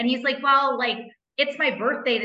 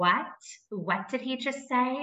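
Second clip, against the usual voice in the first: very slow, soft, elegant, refined, classy voice; 2 semitones higher, 5 dB quieter than usual. Retelling a friend's reaction to a weird remark, imitating Julia. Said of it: "once you listen to my impression".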